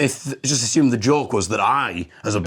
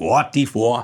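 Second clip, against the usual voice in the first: fake, lower-pitched Jamaican accent; 3 semitones lower than usual. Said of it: "I don't think you know what a Jamaican accent is".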